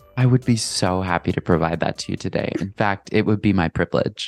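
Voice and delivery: put-on cozy, calm, soothing therapist voice. Offering the listener a talk between two best friends, cozy therapist voice. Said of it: "you sound so cozy".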